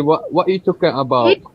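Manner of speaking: Londoner accent. A group discusses british accents; one demonstrates a london accent. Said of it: "this is the London accent".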